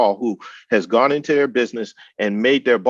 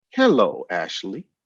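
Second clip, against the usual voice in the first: calm, calming, soothing tone; 4 semitones lower than usual. Greeting the person they were looking for, switching to a soothing voice. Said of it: "That's my that's my soothing voice".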